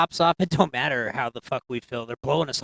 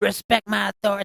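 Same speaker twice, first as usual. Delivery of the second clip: put-on cartoon boy voice, higher; 7 semitones higher than usual. Quoting the cartoon after the president is compared to him: Eric Cartman voice. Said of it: "he's like the Cartman, like Eric Cartman".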